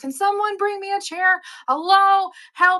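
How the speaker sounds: put-on very high, squeaky shouting. Retelling calling out in a store for a chair: retelling a shout for help. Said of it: "shouting at people".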